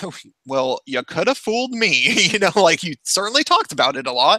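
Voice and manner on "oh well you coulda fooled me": snide, dry, sarcastic tone. Retelling one's own reply to someone who said he wasn't serious: imitating a sarcastic reply. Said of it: ""This is sarcasm."".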